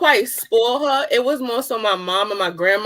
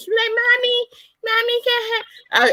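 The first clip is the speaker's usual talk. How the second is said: put-on very high, slow, drawn-out small child voice; 13 semitones higher than usual. A parent retelling how the little one asks for things, imitating a little child's voice. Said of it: "because she's so little with her little voice".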